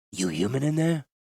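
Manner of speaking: hissed. Narrator reads Eladamri bending low to a cell door's wicket: hissed. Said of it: "he hissed".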